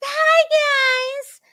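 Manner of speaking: very high, creepy, coaxing, luring voice, drawn-out guys. Mocking someone's greeting as serial-killer-like: mock-creepy luring greeting. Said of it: "like a serial killer trying to get someone".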